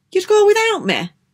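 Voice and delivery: startled, alarmed, very high delivery. A boy reacts on hearing he will be left behind, alarmed. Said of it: "asked Max Ernest in alarm".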